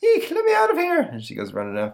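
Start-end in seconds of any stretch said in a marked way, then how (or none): 0.0-1.0 put-on very high, squeaky old lady voice. Retelling a cartoon scene as the ticket taker hearing of a mouse: old lady ticket taker voice. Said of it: "the old lady ticket taker".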